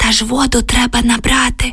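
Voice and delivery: whispering. Oksana answers a man's whispered question, whispering in reply. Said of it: "прошепотіла Оксана у відповідь".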